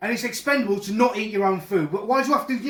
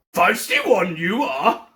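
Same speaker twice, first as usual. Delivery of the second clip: sing-song alien voice, pitch swooping and dipping; 3 semitones lower, 3 dB louder than usual. Speaking to someone who asks what he is doing, Yoda impression. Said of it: "It's Yoda".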